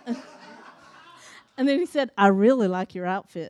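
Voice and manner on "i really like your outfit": put-on low-pitched Southern accent. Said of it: "he had a Southern accent".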